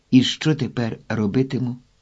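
ordinary delivery

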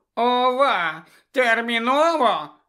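squeaky, thin voice. Reading a story, the second stone gargoyle answers Harry: squeaky thin voice. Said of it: "пискнуло тоненьким голосом".

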